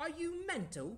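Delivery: put-on English accent, very high and loud. Asked to say British slang in an English accent: English accent. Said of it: "I want to hear you do those in an English accent".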